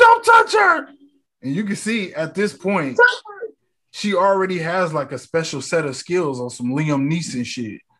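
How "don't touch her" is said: very high, very loud, piercing scream. Retelling a movie scene where a girl defends her sister: retelling a scream. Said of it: "and screams".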